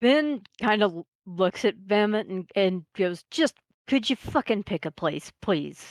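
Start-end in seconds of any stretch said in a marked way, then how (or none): 3.3-5.9 exasperated, exhausted, fed-up, completely done delivery. Voicing a character who asks another to pick a place: exasperated and exhausted. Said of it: "he just sounds and looks exasperated and done and exhausted".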